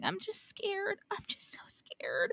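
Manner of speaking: meek, soft, breathy, frightened whispered murmur. Retelling how a woman in an episode refused to walk up the ramp, imitating someone scared, not forceful. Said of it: "saying she's too afraid to walk up the ramp".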